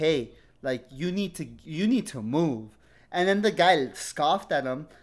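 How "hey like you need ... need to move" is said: mock broken non-native English. Retelling how a father told a man to move: imitating dad's broken english. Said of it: "with his broken ass English".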